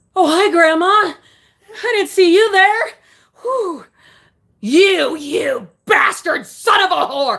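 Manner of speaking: acted laughter. Performing a requested bit, laughing during active labor. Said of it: "laughing during active labor".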